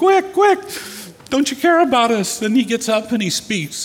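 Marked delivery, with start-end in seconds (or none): 0.0-2.4 frantic, panicked, very high cry. Retelling a storm story, voicing disciples: imitating panicked disciples. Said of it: "start panicking and freaking out".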